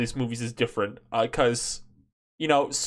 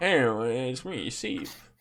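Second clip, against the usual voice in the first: mock sleepy voice, quieter; 4 dB quieter than usual. Teasing another speaker by imitating their YouTuber voice: drunk-or-tired YouTuber voice. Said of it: "I just sound, like, drunk or tired".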